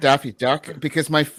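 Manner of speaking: normal talking voice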